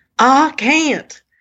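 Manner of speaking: put-on very loud, hollered, strong Southern accent. Retelling what a man said during a guided meditation, loud, strong Southern accent. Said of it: "a very loud, strong southern accent".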